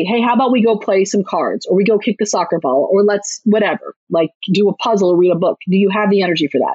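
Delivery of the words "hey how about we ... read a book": ordinary delivery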